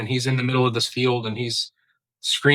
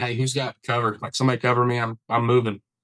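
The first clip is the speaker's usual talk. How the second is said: plain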